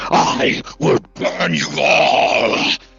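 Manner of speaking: deep angry dragon voice. Voicing a small dragonling whose voice turns older and angrier: deeper, angrier dragon voice. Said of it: "you almost hear a voice that's, like, deeper".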